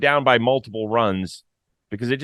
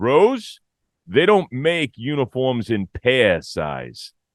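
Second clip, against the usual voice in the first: heavy, thick put-on New York accent; 2 semitones higher than usual. Retell the coach's answer to your joke about getting a uniform, imitating a thick New York accent. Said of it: "Thick New York accent".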